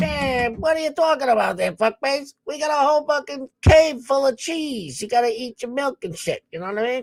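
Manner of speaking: high-pitched cartoon rabbit voice. Retelling what Bugs Bunny says about milk: Bugs Bunny voice. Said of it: "the Bugs Bunny is like".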